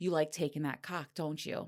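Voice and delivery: ordinary talk, nothing marked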